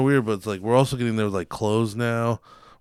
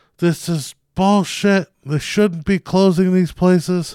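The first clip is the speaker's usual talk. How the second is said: put-on yelling man's voice, higher; 8 semitones higher, 4 dB louder than usual. Retelling how an older man yelled across a store: imitating a man yelling. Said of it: "yelling across the store".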